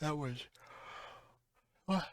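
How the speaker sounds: talking through a yawn. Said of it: "Excuse me, I'm yawning".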